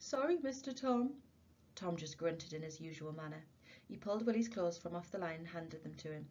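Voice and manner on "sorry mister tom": high, frightened, fearful voice, repeating. Willie keeps repeating his words to tom, fearful. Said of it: "he kept repeating fearfully".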